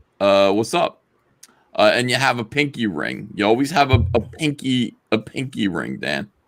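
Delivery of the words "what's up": put-on Jersey guy accent, tossed off casually. Showing how people in Jersey say hello: imitating a Jersey guy's greeting. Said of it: "in Jersey, what you do is you go".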